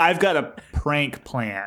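slow words pushed out between clenched teeth. Imitating a movie character's patronizing line: imitating talking through teeth. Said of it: "talking through his teeth a little bit".

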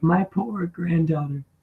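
put-on elderly woman voice. Retelling a favorite line from an episode: imitating the old lady. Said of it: "When she's like".

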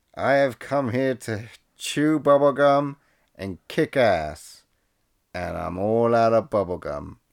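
drawn-out, deliberate speech. Quoting a movie line the way it is delivered: imitating a slow movie line delivery. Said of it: "the line is delivered something like this".

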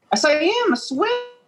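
very high, squeaky, insistent voice. Challenged by a friend who doubts the claim, the speaker insists in a high-pitched voice. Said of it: "Your voice got high pitched".

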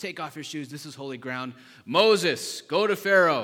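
thundering, booming, very loud divine voice. Retelling the burning bush story, voicing the Lord speaking to Moses: booming voice of the Lord. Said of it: "booming voice of the Lord".

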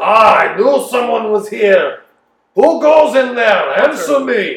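loud, high booming voice sounding distant. Narrating the scene, the storyteller voices someone calling from outside the halls, booming voice. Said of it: "you hear voices booming from outside".

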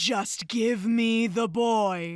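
very slow, drawling witch voice. Quoting a man who sounds like a forest witch, in a forest witch voice. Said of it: "still manages to sound like a forest witch".

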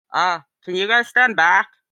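very muffled voice. Game master voicing someone behind a closed door to the players: muffled, from behind a door. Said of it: "very muffled".

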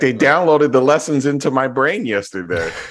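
put-on very high, loud, small child's voice. Speaker acting out what she is going to say, imitating a young child. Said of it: "That's what she's gonna say".

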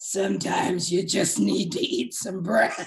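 low, demonic voice. Retelling Oprah answering her trainer in an interview: imitating Oprah's frightening Exorcist voice. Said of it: "in this voice that could have Linda Blair needed for The Exorcist".

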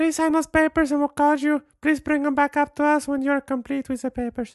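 put-on very high woman's voice with Mexican accent. Retelling a trip to the doctor's office, in a mexican lady impression. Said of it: "my impression of Mexican ladies".

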